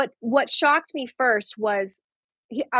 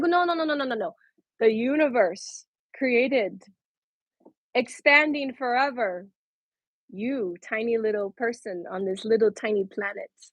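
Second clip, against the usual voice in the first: normal talking voice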